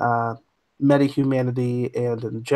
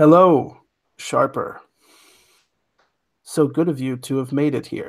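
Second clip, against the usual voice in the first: dry, detached, disembodied voice. A game master voices an ai speaking to sharper through a blank-eyed body, dry and disembodied. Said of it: "The voice comes out a little dry. / And you see the eyes are just like blank and the voice is sort of disembodied in a way".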